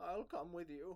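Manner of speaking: put-on high-pitched little old man voice. Narrating a scene and voicing Elo answering the player, Elo's little old man voice. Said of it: "he's got like a little old man voice".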